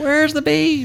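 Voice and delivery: put-on very high, bad old-lady squeal. Quoting the old lady from the beef commercial: terrible old lady impression.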